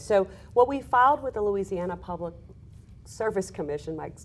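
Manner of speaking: stammering, stuttering through the opening. Answering the host's question in an interview, stuttering. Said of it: "I'm sorry for that stutter there".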